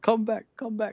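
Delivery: mild mock shout, high and slow. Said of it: "you see Arne Slot shouting at him".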